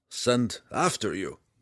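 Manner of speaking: plain reading voice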